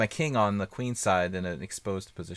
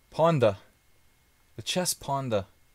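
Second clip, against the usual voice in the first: high, put-on Australian accent on ponda; 5 semitones higher than usual. Mid-game in a chess match, the player says a phrase in an australian accent. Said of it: "It's like an Australian accent".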